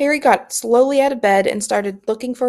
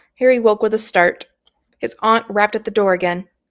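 plain

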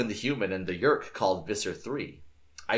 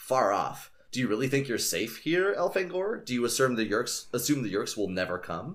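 ordinary delivery

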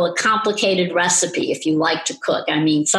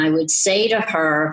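ordinary talk

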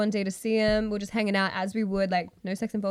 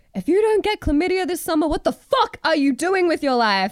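loud, high, shouted ranting delivery; 8 semitones higher, 7 dB louder than usual. Retelling a video reel of a guy yelling at the camera, imitating him yelling. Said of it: "this guy just yelling at the camera".

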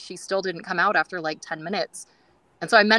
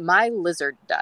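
mock deadpan, flat, slower. Retelling what a woman answered when asked if she was okay, imitating her deadpan. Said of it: "she deadpan goes".

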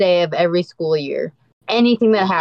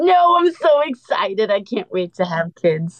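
tearful, sounds like weeping; 2 semitones higher than usual. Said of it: "Sounded like she was crying".

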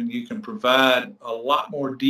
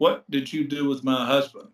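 very stern, hard, accusing tone. Retelling an older lady who came into the speaker's office: imitating a stern voice. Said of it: "with a very stern finger and voice".

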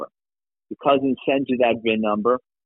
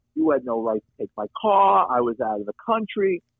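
put-on English accent; 3 semitones higher than usual. Retelling what a caller said on the phone, imitating an english accent. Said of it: "he's got this English accent".

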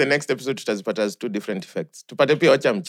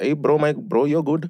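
put-on Indian accent in a male voice. Quoting an Indian man the speaker was talking to, in an Indian accent. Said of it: "Like if I'm talking to an Indian and he's like".

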